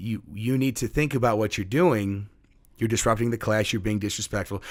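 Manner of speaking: usual speaking voice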